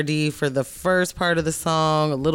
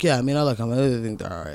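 put-on flat monotone delivery; 4 semitones lower than usual. Mimicking a panel guest answering a question, imitating a flat monotone. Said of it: "He's like very monotone".

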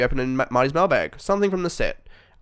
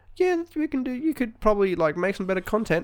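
put-on voice, much higher pitch; 9 semitones higher than usual. Speaker mimics the other person giving feedback, in a high-pitched voice. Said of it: "why do you always go to high-pitched voice?".

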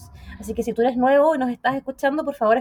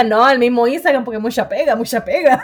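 loud, dogged, pressing insistence, acted out; 6 dB louder than usual. Retelling how they insisted on using instagram: retelling own insisting. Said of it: "Porque yo insistía".

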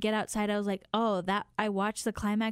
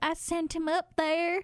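put-on upset voice in a pitched-up Southern accent; 8 semitones higher than usual. Retelling what a crying station manager said: imitating a southern accent. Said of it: "She was very Southern".

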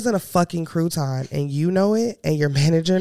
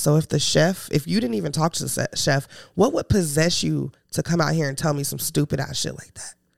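normal talking voice

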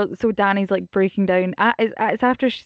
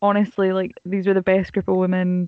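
normal talking voice

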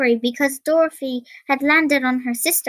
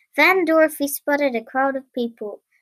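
ordinary delivery

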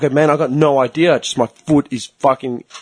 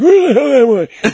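put-on very high, lost, disoriented, confused old man voice; 10 semitones higher, 4 dB louder than usual. Showing how much older and more confused the voice can get: old confused disoriented man voice. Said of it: "I can get a lot more confused and disorientated".

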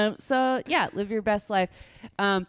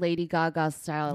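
usual speaking voice

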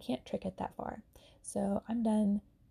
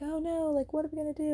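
put-on high, panicked, frantic, worried fretting; 7 semitones higher than usual. Retelling a movie scene, imitating a panicked driver. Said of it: "lady that's driving is freaking out".

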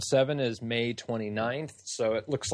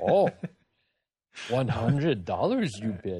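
alien character voice. Answering an imagined auction bid, in a Yoda voice. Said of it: "I just did it like Yoda".

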